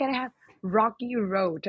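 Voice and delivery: imitated Thai accent. Speaker retells how his dad always asks the server: imitating a thai accent. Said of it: "he always say like".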